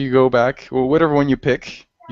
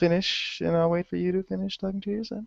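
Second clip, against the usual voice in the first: tiny, high, hushed, barely audible little voice; 6 semitones higher, 10 dB quieter than usual. Waiting for someone to finish talking to their son, the speaker uses a small little voice. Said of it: "I'll just keep talking like this in a little voice".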